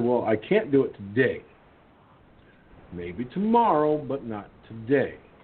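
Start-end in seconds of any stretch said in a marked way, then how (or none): none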